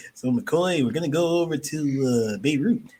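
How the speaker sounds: slow, deliberate delivery, leaning long on "to". Imagining a famous actor taking on a new role: Charles Bronson impression. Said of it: "He's like".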